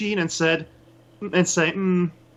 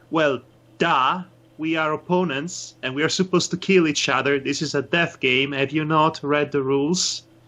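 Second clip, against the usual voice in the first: bone-dry, expressionless, sarcastic deadpan; 4 semitones lower than usual. Retelling what they said to an opponent in a death game, retelling a sarcastic deadpan. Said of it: "sarcastic, deadpan expression imaginable, and I say to him".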